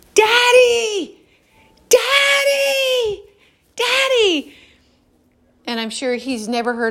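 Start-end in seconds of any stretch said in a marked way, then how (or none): 0.2-4.6 put-on high, loud yell like a child. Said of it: "we're all four yelling".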